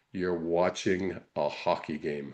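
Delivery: low, quiet, slow, puzzled delivery.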